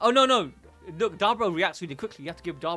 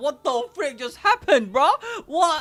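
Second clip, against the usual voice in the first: put-on shocked character voice; 11 semitones higher, 6 dB louder than usual. Voicing Dabura reacting to a failed technique: acting shocked as Dabura. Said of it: "He's so shocked".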